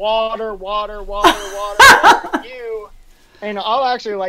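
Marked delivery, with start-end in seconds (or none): 0.0-2.9 loud, drawn-out, rising hollered yell. Retelling coming into an aid station: imitating own yelling for water. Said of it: "yelling, like, you know, hundred meters out".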